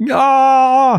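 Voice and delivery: high, loud put-on scream.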